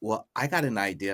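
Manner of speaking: plain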